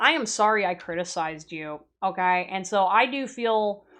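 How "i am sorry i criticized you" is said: usual speaking voice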